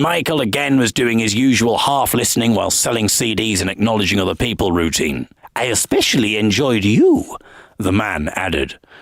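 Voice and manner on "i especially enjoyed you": attempted camp Polish accent with swooping pitch. Retelling what a man said after a gig: camp Polish accent. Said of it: "my attempt at a camp Polish accent".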